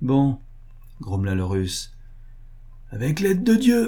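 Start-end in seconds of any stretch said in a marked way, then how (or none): 2.9-3.9 very high, resounding, ringing shout. Narrator reads the Russian before he leaps onto the porch, a resounding shout. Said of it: "cria-t-il d'une voix retentissante".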